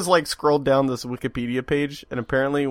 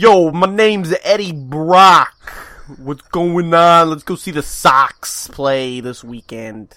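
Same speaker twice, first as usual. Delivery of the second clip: loud, put-on New Jersey accent; 4 semitones higher, 7 dB louder than usual. Imagining how Eddie Brock would talk: Eddie Brock with Jersey accent. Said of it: "What accent is that?".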